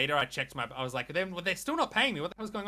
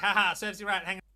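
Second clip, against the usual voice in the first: play-acted, high, taunting, mocking laughing jeer; 5 semitones higher, 3 dB louder than usual. Retelling how an ex laughed at a sunburn: imitating Bri laughing mockingly. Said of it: "My ex was, like, laughing at me".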